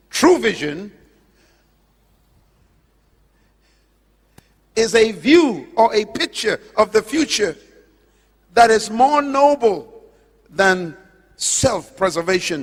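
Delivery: slow, unhurried, deliberate, weighing each word. Speaker announces wanting to say one sentence slowly: slow and deliberate. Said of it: "I want to say this slowly".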